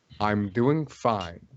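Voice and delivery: rough, gravel-filled, gravelly voice. Narrating the scene, the speaker voices the robed figure's reply in a gravelly voice. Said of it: "in a gravelly voice".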